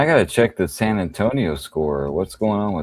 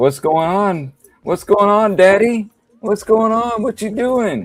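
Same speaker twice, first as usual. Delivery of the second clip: put-on whiny child voice, higher and louder; 5 dB louder than usual. Voicing what the cat seems to say: voicing the cat like a Wonka character. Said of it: "You sounded like a Wonka".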